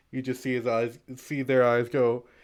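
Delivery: ordinary delivery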